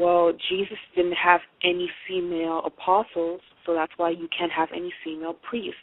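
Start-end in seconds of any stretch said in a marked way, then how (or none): none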